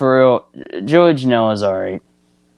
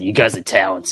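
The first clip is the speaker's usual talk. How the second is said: usual speaking voice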